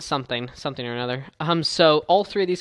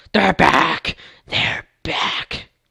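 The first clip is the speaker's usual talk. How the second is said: spooky, creepy monster voice, rough-edged and creaky; 6 dB louder than usual. Presenting the best things of a game update, in a creepy voice. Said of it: "It's a creepy voice".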